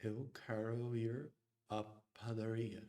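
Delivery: heavy American-accented speech. Showing how a Portuguese sentence sounds in a strong American accent. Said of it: "a very strong American accent ... it would sound like".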